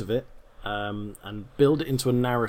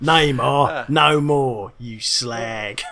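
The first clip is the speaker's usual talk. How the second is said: put-on Cockney narrator voice, louder; 7 dB louder than usual. Continuing the imagined World Cup narration: Ray Winstone impression. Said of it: "my usual impression".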